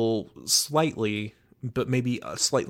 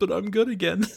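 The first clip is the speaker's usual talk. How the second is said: high, extremely whiny, pleading voice; 9 semitones higher than usual. Recapping an episode, the speaker quotes Melo's reply: imitating Melo's whiny voice. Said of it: "In the most whiny voice possible".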